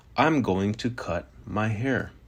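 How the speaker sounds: usual speaking voice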